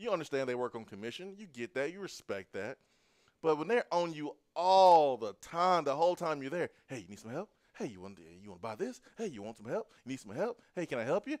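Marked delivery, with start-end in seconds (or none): 6.9-11.4 pushy, hounding, nagging salesperson voice, swooping sing-song. Imitating a salesperson hounding a customer in a store: pushy salesperson. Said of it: "that salesperson is hounding you".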